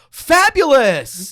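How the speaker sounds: shrill, very high feminine cry at full volume. Imitating a father's habitual exclamation: imitating dad's feminine "fabulous!". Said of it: "He would do it just like that".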